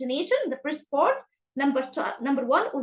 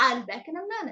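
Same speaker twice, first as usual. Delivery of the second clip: high start, pitch falling through minute. Teaching sentence intonation with an example, starting high and falling at the end. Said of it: "So I start with a raising voice and go to fall it".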